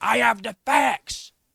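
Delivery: mock angry, slow, drawn-out, creaky high shout. Mocking a man being discussed: imitating someone shouting. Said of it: "look at him shouting".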